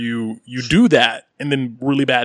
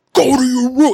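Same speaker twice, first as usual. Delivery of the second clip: put-on scream, higher and louder; 13 semitones higher, 6 dB louder than usual. Retelling how a guy ordered his kids to their room: imitating a scream. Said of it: "just screamed out".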